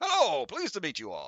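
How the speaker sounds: amusingly droll character voice. Narrating a scene, the speaker voices a character greeting the group, in a droll voice. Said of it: "That is a very droll voice".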